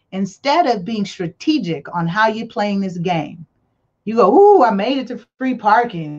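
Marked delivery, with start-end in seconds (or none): 4.3-6.1 teasing, facetious, mocking put-on voice. Mocking people who play without strategy, facetiously imitating them. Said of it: "I'm saying this facetiously".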